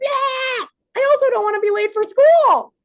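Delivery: very high-pitched screaming voice. Mother reenacting what she told her kids, retelling a scream.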